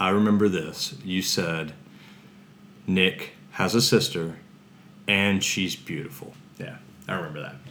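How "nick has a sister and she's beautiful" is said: usual speaking voice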